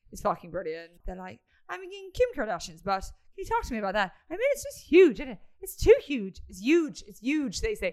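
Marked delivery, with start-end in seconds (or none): 1.6-7.6 put-on loud, swooping, chatty Irish accent. Telling listeners how the Irish people you have been listening to talk, put-on Irish accent. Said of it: "That's not a bad accent".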